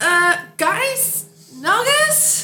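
unsure, high, loud shout with rising tone.

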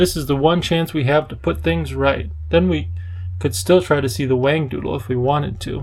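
ordinary delivery, nothing marked

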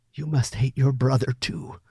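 softly spoken, gentle delivery. Billy answers Clifford, who has just threatened him: softly. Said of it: "Billy said softly".

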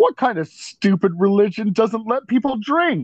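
mock, belittling, shrill, very loud voice. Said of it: "Very loudly".

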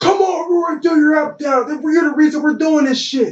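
mock yelling, very high pitch, shouted. Retelling how a coach yelled at him during practice: imitating someone yelling. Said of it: "he yells".

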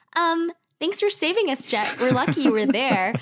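sugary, cringy, aroused charm in a high, sweet voice. Retelling a scene where Katara thanks Jet: imitating a higher, sweeter voice. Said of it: "her voice is higher and sweeter".

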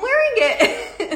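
high, loud, delighted giggling laugh.

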